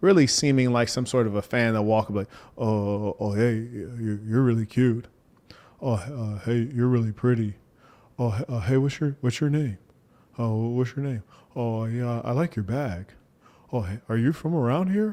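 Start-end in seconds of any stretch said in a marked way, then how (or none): 2.6-15.1 half-swallowed, hesitant, unconfident, unclear muttering. Mocking tall guys who approach women on camera, imitating an unconfident mumble. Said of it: "they walk up mumbling, speaking unclearly, unconfident".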